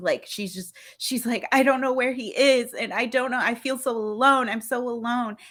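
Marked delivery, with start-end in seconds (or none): 1.5-5.4 high, weepy, tearful, lonely crying voice. Retelling an anime scene where a girl in the rain starts crying: imitating someone crying. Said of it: "she just starts, like, crying".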